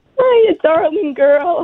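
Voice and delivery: very high, tearful, tender, crying voice. Greeting her daughter on a birthday phone call, crying while talking. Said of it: "why are you crying right now?".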